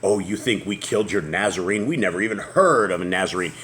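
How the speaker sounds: ordinary talk, nothing marked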